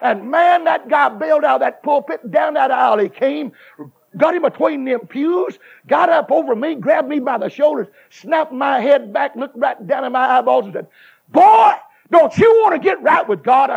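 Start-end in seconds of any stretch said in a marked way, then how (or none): 11.3-13.7 put-on booming preacher-style voice, louder and higher. Retelling how a preacher grabbed him and spoke, imitating a booming preacher voice. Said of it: "He had a bullhorn for a voice".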